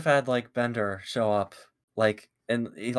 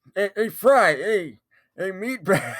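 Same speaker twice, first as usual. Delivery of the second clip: put-on elderly man's voice; 9 semitones higher, 6 dB louder than usual. Redoing a Bender voice from a past episode of the show, Bender voice sounding like old man. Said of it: "kind of sound like an old man".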